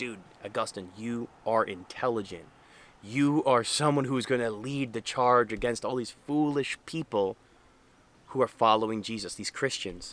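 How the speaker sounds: ordinary talk, nothing marked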